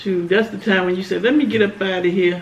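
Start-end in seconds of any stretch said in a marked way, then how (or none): none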